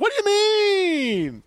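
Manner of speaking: very high voice, "mean" long and drawn out. Show off your impression of someone you've known about five years, a T-shirt impression. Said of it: "I got a pretty good T-shirt impression".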